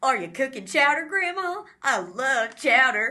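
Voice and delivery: belted movie-style delivery. Imitating a movie character's odd line delivery: imitating Sophie's line delivery. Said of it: "That is what she sounds like".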